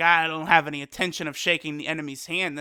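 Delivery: ordinary delivery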